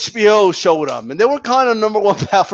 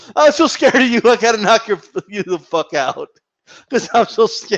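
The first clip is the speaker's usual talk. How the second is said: usual speaking voice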